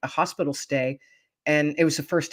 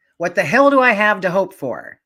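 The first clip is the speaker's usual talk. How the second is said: put-on loud yell with an angry tone; 4 semitones higher, 7 dB louder than usual. Speaker acts out a man yelling back after being wished a blessed day: imitating an angry yell. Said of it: "yelled... with a tone of anger".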